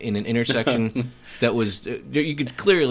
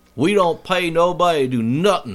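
rough put-on Southern accent, pitched up; 5 semitones higher, 4 dB louder than usual. Speaker admits not managing the accent, then attempts a put-on southern accent. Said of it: "I can't really do a southern accent".

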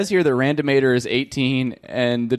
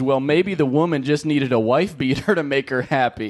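normal talking voice

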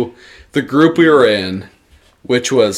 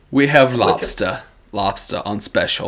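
fake English accent, lower, quieter; 3 semitones lower, 4 dB quieter than usual. Retelling restaurant waiters faking accents while announcing the special, fake English accent. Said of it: "Clearly had an English accent".

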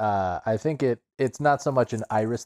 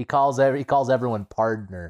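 normal talking voice

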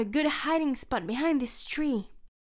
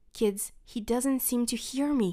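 ordinary delivery

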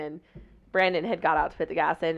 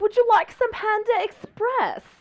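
high put-on British accent, not posh. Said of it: "in a British accent".

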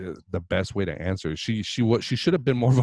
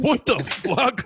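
mock heated arguing tone, higher pitch. Imitating a woman reacting in an interview: imitating her heated parking-lot talk. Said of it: "talking like if you're in the parking lot and nobody's recording".

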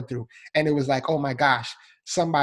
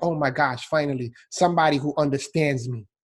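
normal talking voice

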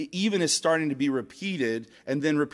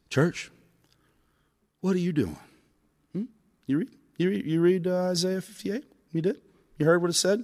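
mock-serious preacher voice, pitched higher; 3 semitones higher than usual. Speaker acts out a televangelist pastor leaning into the camera, imitating a real serious pastor. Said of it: "gets real serious like".

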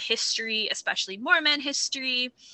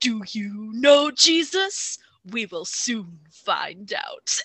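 acted, dramatic, intense computer-game announcer voice. Recalling how a Bible trivia computer game opened, in a big booming voice. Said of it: "this big booming voice".

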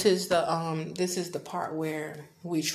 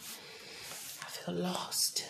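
very soft, slow, voiceless whisper from the stomach. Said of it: "I hope you can hear me 'cause I'm whispering".

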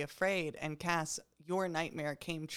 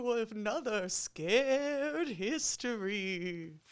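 spooky ghoul voice, higher; 5 semitones higher than usual. Podcast hosts announcing the show title in spooky, ghouly voices. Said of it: "we're trying to do these spooky, ghouly voices".

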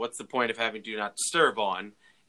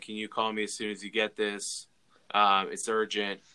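mock-somber tone, very low and quieter; 3 dB quieter than usual. Retelling a man's voicemail asking for a call back: imitating a somber tone. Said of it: "very like somber".

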